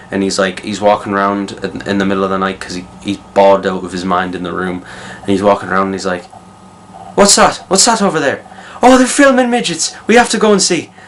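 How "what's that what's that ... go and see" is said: bad fake Irish accent, very high, shrill, loud. Retelling a scene where a man wanders at night with Ken: bad Irish accent. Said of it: "that was a shit Irish accent".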